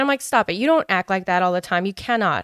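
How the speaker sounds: plain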